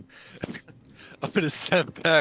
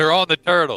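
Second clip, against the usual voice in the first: booming yell, as loud as possible; 2 semitones higher, 9 dB louder than usual. Playing a character calling out from the water's surface: yelling as loud as possible. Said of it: "I'm just gonna yell out as loud as I can".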